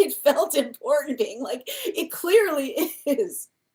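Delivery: words broken up by laughing hard throughout. Speaker reacting to the other person's dream story, laughing hard. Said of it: "I'm sorry I'm laughing so hard".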